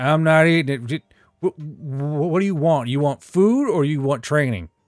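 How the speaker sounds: talking around a cigarette. Voicing a tired character offering training: talking with a cigarette in mouth. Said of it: "never actually takes a cigarette out of his mouth".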